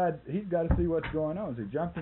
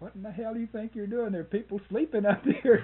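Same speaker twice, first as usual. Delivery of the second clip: full, high-pitched shout; 6 semitones higher than usual. Telling how a man rushed to a window after a tear gas canister exploded: retelling a yell. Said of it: "goes rushing over to the window and yelling".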